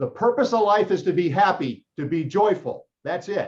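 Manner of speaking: put-on heavy, loud, high South Carolina accent, laughing. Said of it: "this great South Carolina accent".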